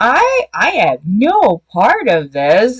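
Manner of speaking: very slow, drawn-out, swooping sarcastic tone. Retelling a book character's denial to an angry friend: imitating a sarcastic denial. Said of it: "the whole sarcastic".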